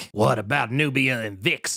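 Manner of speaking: put-on shaky, nasal old man voice. Redoing a bit that people enjoyed: Ronald Reagan impression. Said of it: "this shit right here".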